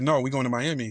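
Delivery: ordinary delivery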